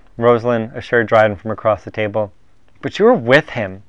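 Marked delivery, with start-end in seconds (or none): 2.8-3.7 scornful, irritable, sneering. Reading Dryden answering Rosalind across the table, sneering. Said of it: "he sneered".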